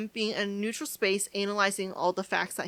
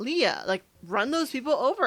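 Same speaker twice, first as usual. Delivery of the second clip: ordinary talk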